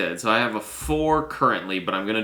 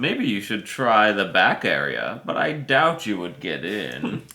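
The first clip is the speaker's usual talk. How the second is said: mild, put-on German accent. Reading out a quote from a card to the others, in a put-on German accent. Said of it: "Is that your German accent?".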